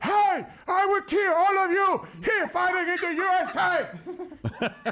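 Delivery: put-on heavy, thick Cuban accent, very high and slow. Recalling a feared Cuban UFC fighter, doing a Yoel Romero impression. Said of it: "his heavy Cuban accent".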